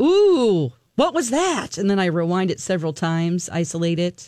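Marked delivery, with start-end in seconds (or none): 0.0-1.8 mock excited, high, drawn-out, swooping ooh. Retelling hearing a sound on a recording: imitating own excited reaction. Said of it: "I get super excited".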